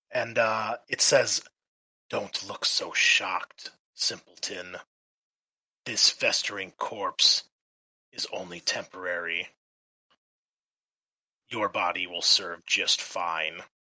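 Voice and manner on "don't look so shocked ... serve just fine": eerie, raspy, echoing undead male voice. Voicing a speaking corpse in a coffin: eerie, echoey raspy male voice. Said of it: "a bit of a eerie, echoey rasp to it".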